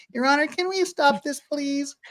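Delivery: put-on very high, small young boy's voice. Quoting a man's plea to the judge to stop the questioning, in a little boy voice. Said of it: "We have to give him a little boy voice".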